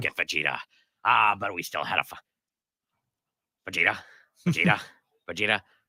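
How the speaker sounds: raspy put-on voice. Repeating a running bit with the other hosts, in a raspy put-on voice. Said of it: "raspy voices like that".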